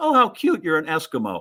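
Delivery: put-on sweet, kindly, doting and charmed old lady voice. Retelling what the lady said on opening the door to him, kindly old lady voice. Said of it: "this kindly old lady".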